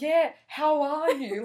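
very slow, loud, high, drawn-out yelling. Retelling a lady in a cinema on her phone: imitating someone yelling at a phone. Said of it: "she was just yelling at the phone".

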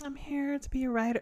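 breathy seductive put-on voice. Mocking a show's character after quoting her professor: imitating a breathy "blowjob voice". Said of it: "her voice is very like".

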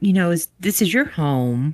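ordinary talk

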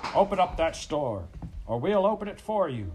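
loud, high-pitched shout. Reading a shout from the crowd of men facing pa: shouted. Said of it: "came a shout".

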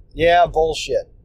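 ordinary talk, nothing marked

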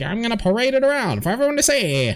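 very high, hustling huckster showman voice. Retelling how a con man showed off a body: imitating a con man. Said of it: "con man who's like".

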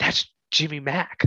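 quiet stage whisper under the breath. Retelling what a girl said while passing her: imitating someone whispering. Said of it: "he hears her whisper".

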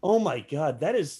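thrilled, worked-up, enthusiastic gushing. Praising a film scene to another speaker: loud excited talking.

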